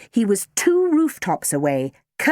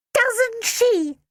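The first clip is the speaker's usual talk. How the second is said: very high, little squeaky voice; 14 semitones higher than usual. Reading a story aloud, a teacher catches pupils talking: squeaky voice. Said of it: "said a squeaky voice".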